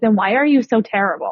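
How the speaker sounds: plain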